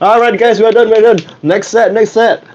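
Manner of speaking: high-pitched, called-out voice.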